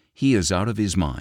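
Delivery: ordinary delivery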